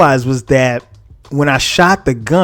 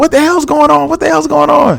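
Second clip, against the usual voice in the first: mock very high, raspy, rough yell; 12 semitones higher than usual. Retelling the mother coming downstairs: imitating mom yelling. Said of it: "She's yelling".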